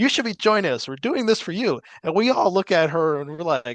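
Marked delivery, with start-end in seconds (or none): 0.0-1.8 put-on manic woman voice, higher. Retelling what a woman said to a crowd at a protest: imitating a manic woman. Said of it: "she was being manic".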